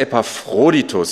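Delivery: Epaphroditus with stress on the "phro" syllable. Explaining how to pronounce the name: stress on 'phro' in Epaphroditus. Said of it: "die Betonung liegt auf dem O".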